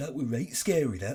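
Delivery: put-on very broad Yorkshire accent, laid on thick. Quoting audience members turning around after a screening, in the broadest Yorkshire accent. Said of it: "saying the broadest Yorkshire accent imaginable".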